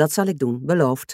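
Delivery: plain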